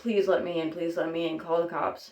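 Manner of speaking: put-on panicked, frantic voice. Retelling begging an old couple on their porch to let them in: imitating a panicked plea. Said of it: "I start flipping out more".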